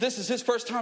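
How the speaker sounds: ordinary delivery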